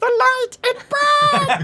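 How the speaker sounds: little tiny voice. Something beneath a character's robes speaks up: tiny voice. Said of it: "You hear a tiny voice going".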